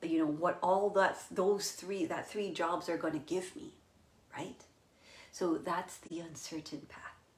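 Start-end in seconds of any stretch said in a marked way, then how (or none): none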